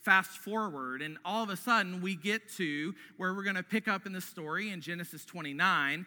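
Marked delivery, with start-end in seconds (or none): none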